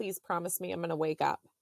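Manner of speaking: ordinary talk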